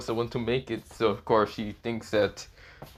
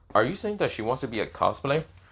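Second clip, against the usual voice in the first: plain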